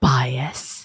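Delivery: airy, breath-filled delivery. Asked by the other speaker to say the word again: breathy voice on bias. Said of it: "say bias in that breathy voice again".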